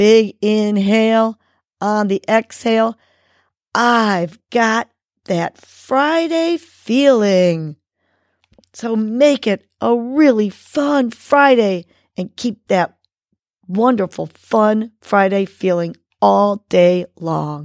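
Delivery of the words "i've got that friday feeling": enthusiastic, drawn out, said like it's meant. Repeating the affirmation a last time, meaning it: enthusiastic. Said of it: "Say it like we mean it".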